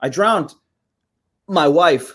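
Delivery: loud, very slow, halting, hard stops between words. Trying a voice with stronger stops: Christopher Walken voice. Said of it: "that's Walken".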